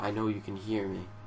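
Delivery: unruffled, very calm, very quiet low hush. Retelling what the man sitting across from them said, imitating a very calm voice. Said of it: "not even like an angry voice, but a very calm".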